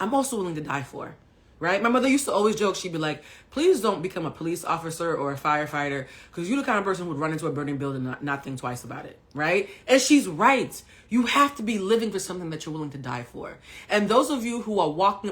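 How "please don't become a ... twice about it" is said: ordinary talk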